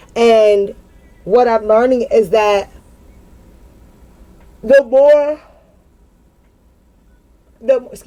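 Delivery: yawning while speaking. Reflecting on how to build relationships now, yawning. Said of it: "I keep yawning".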